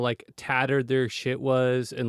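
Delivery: ordinary talk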